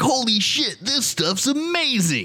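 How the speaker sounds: put-on pushy, sleazy used car salesman voice, drawn out. Acting out a douchier sales pitch after being asked: put-on douchey used car salesman. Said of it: "more used car salesman".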